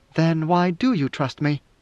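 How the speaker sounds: ordinary delivery, nothing marked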